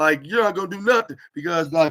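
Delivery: loud, high, hilarious shouting. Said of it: "was hilariously shouting".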